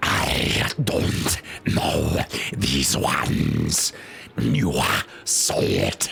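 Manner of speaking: very slow, creaky, rough monster voice. Retelling how the speaker voiced this monster character: own rough slow monster voice. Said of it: "It sounded like".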